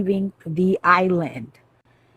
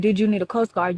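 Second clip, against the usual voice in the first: normal talking voice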